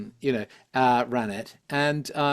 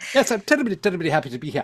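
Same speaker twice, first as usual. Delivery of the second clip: put-on terse, clipped old-film speech, pitched up; 5 semitones higher, 3 dB louder than usual. Describing how everybody spoke in old monochrome films, in a short, clipped voice. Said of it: "And everybody spoke like that".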